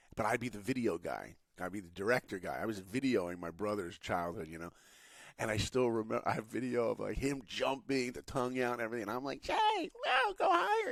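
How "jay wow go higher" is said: put-on shrill, very high, screechy little-kid voice. Retelling filming his brother jumping when he was a kid, in a screechy kid voice. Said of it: "my screechy voice".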